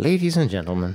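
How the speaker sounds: posh, regal, grand upper-class British accent. Podcast co-host repeating his greeting to listeners, mock regal British voice. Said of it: "I'm trying to be more regal".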